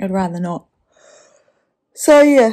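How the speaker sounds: speaking through a yawn. Complaining about mushy scenes, yawning while talking. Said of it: "sorry, I'm yawning again".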